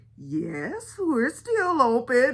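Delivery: very slow, drawn-out, swooping, sing-song sarcasm. Retelling a phone call, quoting the woman who answered, mimicking a sarcastic reply. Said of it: "she said it just in that sarcastic manner".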